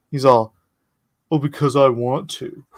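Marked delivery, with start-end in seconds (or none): 1.3-2.5 mocking, derisive put-on voice. Retelling a masked man's answer to the speaker, mocking his answer. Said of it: "I'm making fun of him".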